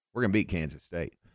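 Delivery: calm, even delivery. Retelling a coach's pregame promise, imitating Coach Briles, calm. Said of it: "just very calmly".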